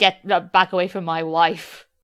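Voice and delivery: thick Scottish character voice. Recapping a movie scene, the speaker quotes a line in a thick Shrek voice. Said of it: "the very thick Shrek voice".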